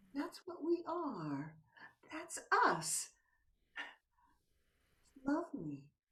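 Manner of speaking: speaking in a whisper. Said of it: "It's whispering time".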